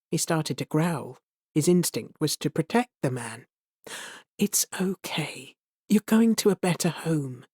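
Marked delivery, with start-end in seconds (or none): 4.3-7.3 gentle, soft, reassuring whisper. Reading a story aloud, a woman reassures a frightened animal: gentle whisper. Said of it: "she shouted again".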